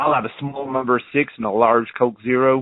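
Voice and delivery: imitated American accent. Ordering at McDonald's in Centerville, speaking in an American accent. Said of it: "I decided to order with a, an American accent, and I was like".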